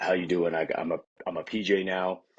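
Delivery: very deep voice, sunk way down low. Recalling putting on his beret as a PJ, the speaker's voice drops two octaves. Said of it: "my voice actually dropped uh, two octaves".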